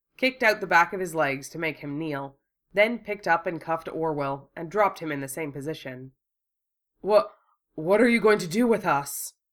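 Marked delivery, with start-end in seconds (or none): 7.0-9.3 breathless gasping, out of breath, pitched up. A handcuffed man forced to kneel asks his captor, gasping, breathless. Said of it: "Orwell gasped, still breathless".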